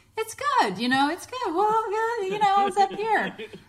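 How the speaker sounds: high-pitched everyday voice perched up high. Imitating how they used to talk about past partners, in a high-pitched voice. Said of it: "I talked in that high-pitched voice".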